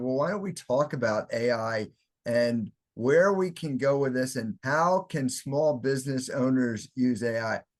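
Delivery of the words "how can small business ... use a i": ordinary talk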